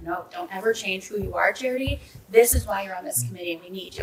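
ordinary talk

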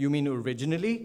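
clumsy, very bad put-on Indian accent. Retelling a film scene where a non-Indian actor plays an Indian man; very bad fake Indian accent. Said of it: "very bad Indian accent".

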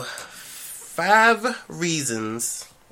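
very slow, high, drawn-out delivery, each word stretched.

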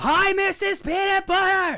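very high-pitched, yelled shout. Repeating a greeting after being told she can't hear, yelling. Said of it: "stop yelling".

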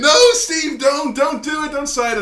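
mock very high, shrill, scared, frantic pleading scream. Retelling a wrestling segment, imitating Michael Cole screaming: imitating Michael Cole screaming. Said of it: "he starts screaming".

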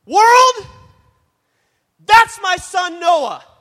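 high, loud, joyful, excited yell, drawn out. Acting out the moment a son closes the car door: acting out a joyful scream. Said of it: "I'm gonna scream to the top of my lungs".

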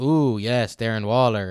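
alien voice, slow and drawn out. Imitating the herd of fans swooning over a player like Toy Story aliens. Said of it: "He's like the aliens from Toy Story".

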